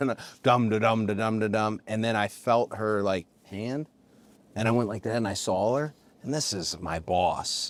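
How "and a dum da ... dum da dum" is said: mouthed drum rhythm, "dum da dum". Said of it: "I'm making the sound".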